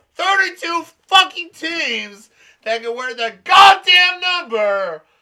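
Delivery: very loud, high, swooping rant that climbs in pitch. A co-host complaining during an episode, very loud shouting.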